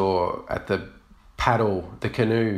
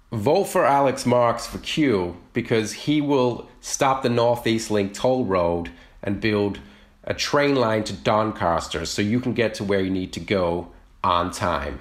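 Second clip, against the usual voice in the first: put-on American accent all the way through. Asked to give a pitch for a candidate in Q, in an American accent. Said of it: "do it completely in an American accent".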